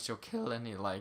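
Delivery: voice cracking mid-sentence. Explaining a game character's damage when the voice suddenly cracks. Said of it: "wow, nice voice crack".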